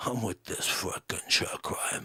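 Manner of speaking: breathy, near-whispered, breathed-out delivery. Showing how a comedian talks: imitating Joey Diaz. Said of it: "Joey Diaz kinda talks like this".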